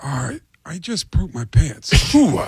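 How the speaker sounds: put-on baby voice. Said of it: "the baby would chime in and go".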